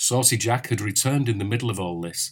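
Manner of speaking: ordinary delivery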